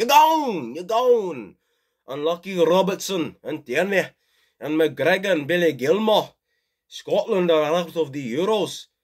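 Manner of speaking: put-on Scottish accent. Commentating on a match, the speaker calls the result in a Scottish accent. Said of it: "Tell me how my Scottish accent was".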